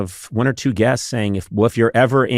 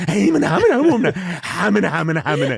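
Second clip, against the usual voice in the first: put-on nervous stammering, higher pitched; 7 semitones higher than usual. Mimicking a nervous greeting, like a nervous character in a bad old sketch. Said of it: "You're like someone in a bad old sketch who's nervous".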